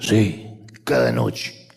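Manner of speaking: very raspy, hoarse, low rasping voice. Telling a story, as the bartender answers a man's question, very hoarse voice. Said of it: "con una voz muy ronca".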